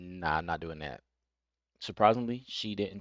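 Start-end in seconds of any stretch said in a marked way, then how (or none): 0.0-1.0 mock-blunt, firm, flat delivery. Retelling how he turned down a woman's request, acting out a blunt refusal. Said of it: "straight up with like".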